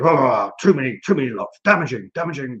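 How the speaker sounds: loud, blustering rant. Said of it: "the Paris Council come along and say".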